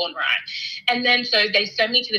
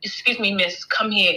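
grave, stern, serious, all-business sergeant voice. Retelling how a sergeant in full military called her aside: imitating a serious sergeant. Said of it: "looking super serious".

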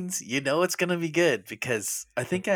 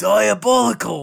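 put-on loud, high, slow, drawn-out Australian accent. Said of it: "My Australian accent just isn't quite up to snuff".

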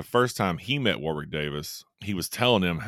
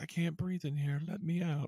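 put-on eerie little child's voice, very high, creepy; 11 semitones higher, 8 dB quieter than usual. Retelling someone's mimicry, do the creepy kid voice. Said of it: "The creepy ass kid voice".

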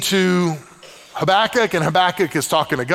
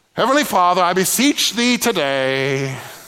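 slow, put-on, old-fashioned, mature British accent. Showing how prayers supposedly must sound: mock British accent. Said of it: "speak with a British accent".

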